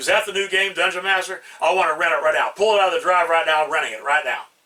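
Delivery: put-on impatient, rude, pushy tone. Retelling a customer walking in and demanding to rent a game: imitating a rude customer. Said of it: "very rude".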